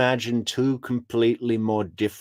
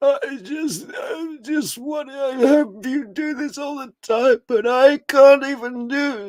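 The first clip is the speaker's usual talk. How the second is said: very high, put-on, strained croaky voice; 4 dB louder than usual. Mocking someone who fakes being ill: imitating a croaky voice. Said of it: "it's that croaky voice thing".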